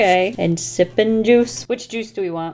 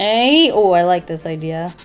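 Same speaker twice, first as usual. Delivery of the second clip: ordinary talk, nothing marked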